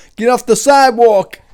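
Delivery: put-on shrill, very loud, booming, high New York accent. Doing a stock New York line: put-on New York accent. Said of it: "love that accent".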